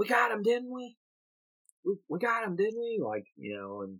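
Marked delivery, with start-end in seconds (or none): 0.0-3.0 mock wild, delusional, delirious yelling, very high. Retelling a movie scene where a sick character yells: imitating a character yelling. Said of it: "he's yelling".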